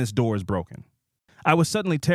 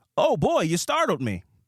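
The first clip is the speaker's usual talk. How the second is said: put-on transatlantic accent, lilting, pitched up; 6 semitones higher than usual. Startled by a homeless man, answering him in a transatlantic accent. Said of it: "I hit the transatlantic accent on him".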